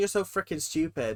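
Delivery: put-on mutter under breath. Guessing what a kid on camera said: imitating muttering under breath. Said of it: "under his breath".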